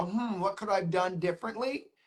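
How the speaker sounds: usual speaking voice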